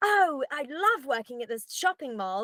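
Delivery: stilted, falsely bright acting voice. Acting teacher imitating adults who come into a scene; imitating adults' fake acting voice. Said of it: "who speaks like that?".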